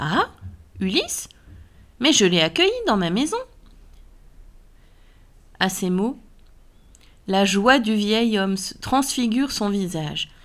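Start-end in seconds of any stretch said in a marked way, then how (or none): 0.0-3.4 falsely acted astonishment, feigned put-on surprise. Ulysses answers the old man's account of his lost king; feigned surprise. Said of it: "Ulysse feignit la surprise".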